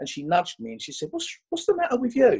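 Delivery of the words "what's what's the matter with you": put-on Enfield accent. Recalling a classmate nudging them at a first-day school assembly, imitating an Enfield accent. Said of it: "In her best Enfield accent".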